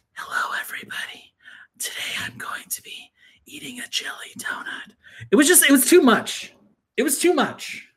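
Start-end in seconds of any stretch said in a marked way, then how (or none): 0.2-5.0 hushed, very soft, close ASMR whisper. Imitating an asmr video of someone eating a donut: imitating an asmr whisper. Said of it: "that was actually pretty good".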